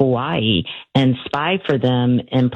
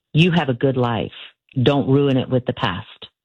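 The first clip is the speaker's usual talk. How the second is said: imitated thick German accent. Retelling what she said when pelted with questions: thick german accent. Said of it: "she said in a really thick German accent".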